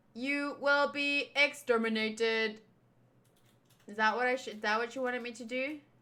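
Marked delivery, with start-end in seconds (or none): 0.2-2.6 very drawn-out, slow, flat mechanical robot voice. Voicing a character that turned into a robot, in a robot voice. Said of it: "robot voices".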